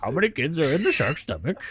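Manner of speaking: loud, high Cajun-accented professor voice. Imitating his professor's questions for the group, in a professor voice. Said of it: "what is that accent?".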